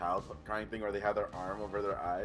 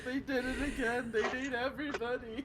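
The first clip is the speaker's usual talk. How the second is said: put-on sobbing, higher and quieter; 14 semitones higher, 4 dB quieter than usual. Retelling how Rory reacted when the screen went splat, imitating Rory sobbing. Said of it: "You just hear Rory sobbing".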